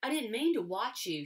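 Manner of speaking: embarrassed, stung, resentful tone. Caught watching a boy, she steps into the clearing: protesting. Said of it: "she protested".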